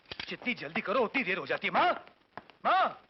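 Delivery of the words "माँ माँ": much higher, louder yelling. Son calls out to his mother before leaving for an important meeting, shouting. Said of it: "चिल्ला क्यों रहे हो?".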